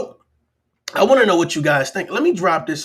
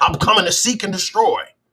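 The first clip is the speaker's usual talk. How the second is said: ordinary delivery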